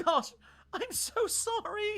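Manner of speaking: crying, very high, slow and drawn out. Voicing a doctor apologizing after a colleague vanishes: crying while apologizing. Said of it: "Starts crying".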